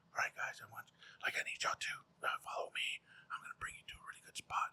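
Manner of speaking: whispered, very quiet, hushed guide voice. Retelling how the guide Frank led the group where talking wasn't allowed: imitating Frank's hushed voice. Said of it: "And he's real quiet now".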